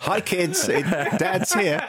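very upbeat, high-pitched, drawn-out voice. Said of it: "you just typically are very up".

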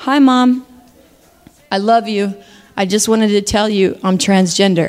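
put-on heartbroken, heartbreaking tone. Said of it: "That's what my actual voice in that moment sounded like".

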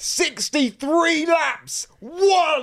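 very high, excited sports-commentator hype, one word drawn out. Told to say it with more enthusiasm, like a commentator: enthusiastic commentator voice. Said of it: "say it with more enthusiasm, as if you're a commentator".

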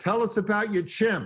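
high, mock heckler's call, yelled out. Retelling calling out from the back of the room: imitating own past yell. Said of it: "I yell out".

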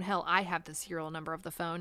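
stressed I, I punched, said fast. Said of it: "Police have the serial number".

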